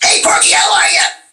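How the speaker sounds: put-on cartoon goat character voice. Showing how the character talks in a cartoon recording session: Gabby Goat voice. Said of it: "Gabby talks like this".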